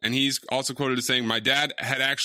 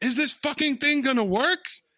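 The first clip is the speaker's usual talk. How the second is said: shrill high-pitched yell; 13 semitones higher than usual. Recounting his first film day when she shouted at him; retelling a shout. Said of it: "and she shouts".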